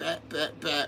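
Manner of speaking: soft, quiet tapping sounds. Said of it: "It's easier if you hit it softly".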